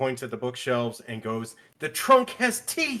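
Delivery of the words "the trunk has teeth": piercing, shrill, very high shrieking scream. Narrator voices a woman pointing at bookshelves: screaming woman.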